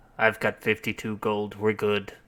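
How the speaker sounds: hushed, under-the-breath stage whisper. Half-whispering to Robin in character about having enough gold: half-whispering in character. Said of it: "I whisper, I whisper over to Robin".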